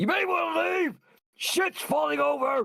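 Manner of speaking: shrill, high yelled shout. In a tabletop game, the narrator voices Regard as the door closes: shouting a warning. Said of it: "Regard is just going to shout".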